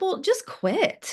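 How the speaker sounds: high-pitched, slow, offhand tone. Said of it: "He'd be like".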